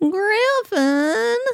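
very high, tinny, fake cheap-microphone voice. Pretending to speak through an old bad microphone: put-on bad old microphone voice. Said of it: "are you gonna do the whole second thing in that voice".

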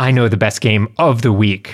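calm, assured, self-certain, confident tone. After promising to stop yelling, saying the line confident, no yelling. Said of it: "I'm not going to yell anymore. But I am going to say this with confidence".

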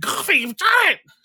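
quacked out, high and loud. Telling a made-up story about Goofy and Donald in a lab, Donald Duck voice. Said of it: "Donald's like".

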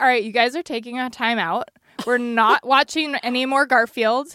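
ordinary talk

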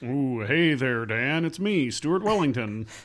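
slight cowboy voice. Podcast co-host greets the host at the episode's start, a little bit cowboy. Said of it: "That was a little bit of a cowboy".

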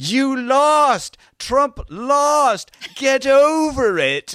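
very high, loud, drawn-out jeering yell. Retelling a man yelling at people in trucks with Trump flags; retelling a yell. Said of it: "he was just yelling out at them".

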